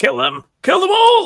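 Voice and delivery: shrill, very high, loud screaming. Voicing the herald in a game scene, who just stands there screaming. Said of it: "stands there and screams".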